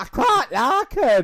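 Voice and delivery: very high, loud, terrible put-on Scottish accent. A half-scottish person tries the accent again after being mocked for it, bad scottish accent. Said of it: "your Scottish accent is shit".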